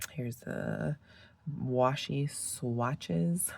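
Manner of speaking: very slow, careful, deliberate pronunciation. Speaker names a paper product carefully so as not to mess it up, very slow. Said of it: "I have to say it very slow".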